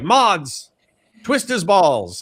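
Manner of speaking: slow, high, swooping screaming. Retelling how a streamer yelled at his mods: imitating Chud Logic screaming. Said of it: "screaming at his mods".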